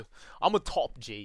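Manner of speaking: slow, drawn-out boast, leaning on every word. Imitating what the fans say, trying to do the voice: imitating Andrew Tate. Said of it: "I can't even imitate it".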